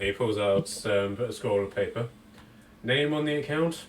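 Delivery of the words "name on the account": very bored, utterly disinterested, uninterested flat tone. A clerk pulls out a scroll and asks the group for an account name, very bored. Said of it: "He says in a very bored voice".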